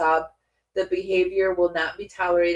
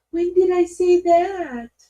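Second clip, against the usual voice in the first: the most innocent voice, very high; 12 semitones higher, 5 dB louder than usual. Imitating her line in the most innocent voice. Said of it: "She says it in the, like, the most innocent voice".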